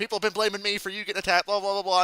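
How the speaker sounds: acted, loud, high-pitched yelling rant. Retelling a wrestling segment, imitating Liv Morgan yelling at Jade. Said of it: "yelling at her".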